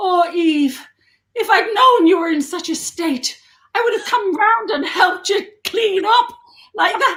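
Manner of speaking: weak, admittedly bad Irish accent. Retelling what her partner's Irish nan said on a visit: attempted Irish accent. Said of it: "and I can't do an Irish accent".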